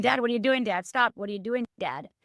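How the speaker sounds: plain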